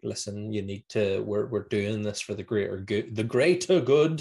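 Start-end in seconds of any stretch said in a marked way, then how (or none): none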